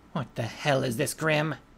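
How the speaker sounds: spoken through gritted, clenched teeth. Narrator, unable to move, glares and demands an answer: through clenched teeth. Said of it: "saying through clenched teeth".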